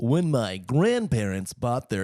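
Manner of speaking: put-on vintage old-timey radio announcer delivery. Starting a story about grandparents in an old-timey announcer voice. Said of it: "maybe I can do it in like a old timey announcer voice".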